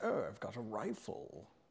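very slow, drawn-out British drawl. Picturing being hunted on an island, imitating Barnaby's British voice. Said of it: "he talks like this and he's like".

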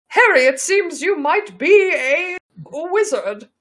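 put-on perfectly posh upper-class British accent. Performing a scene addressed to harry, perfectly posh british accent. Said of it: "speaks with a perfectly posh British accent".

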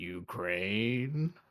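bad character voice, slowly drawn out. Setting up a bit, the speaker launches into a Lurch impression. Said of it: "my impression of Lurch finding out".

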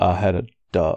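very quiet, unhurried and deliberate murmur. Staring down another character in the game: said really quietly. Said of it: "really quietly just go".

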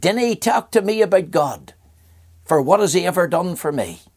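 Aberdeen woman's Scottish brogue. Retelling what a woman at her door in Aberdeen said, in a Scottish brogue. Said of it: "in a Scottish brogue".

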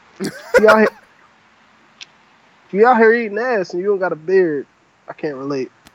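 words broken up by laughter. Delivering a joke line while trying to stop laughing: laughing while talking. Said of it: "I gotta stop laughing when I give these".

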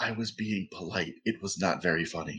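quiet, hushed aside. Voicing a character who leans over to another and speaks: said quietly. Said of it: "and just quietly says".

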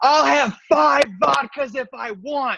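mock shrill, furious, very high angry scream. Retelling a woman ordering vodkas: retelling her angry scream. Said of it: "And then she screams".

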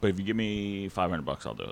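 acted straight, no-joke, matter-of-fact delivery. Retelling what a psychiatrist said: imitating a straight-faced delivery. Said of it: "Said it with a straight face".

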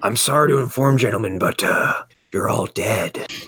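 whispered, hushed villain character voice. Recalling a villain performance that was fun, whispery villain voice. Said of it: "whispery villain voice".

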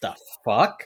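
affronted, offended, baffled outburst of disbelief. Retelling a character's reaction to someone unbuttoning her top: imitating Bailey sounding offended. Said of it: "He is so offended".

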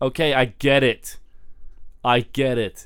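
usual speaking voice

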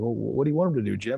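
play-acted odd, strange-sounding, off-kilter tone. Retelling what someone said about a called timeout, retelling a weird tone. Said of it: "he was like kind of in a weird tone".

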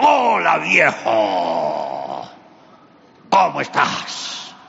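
booming, loud, gruff, rough thunderous voice. Storyteller voicing Esau arriving with food to greet his father, Esau's thunderous voice. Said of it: "con esa voz de trueno".

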